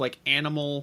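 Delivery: plain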